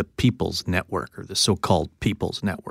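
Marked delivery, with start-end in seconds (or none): 1.2-2.7 soft, snarky aside. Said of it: "you actually looked snarky there when you said that".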